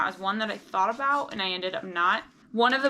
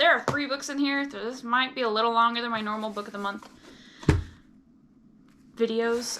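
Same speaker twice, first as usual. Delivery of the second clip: hyped-up, rapid chatter, rushing through the words. Unboxing a book-of-the-month box on video, talking very fast. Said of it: "although I am talking very fast".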